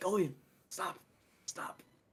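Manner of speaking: soft, hushed, barely voiced whisper. A player, in character beside Jolie, speaks to Golian in a whisper. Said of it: "I'm whispering".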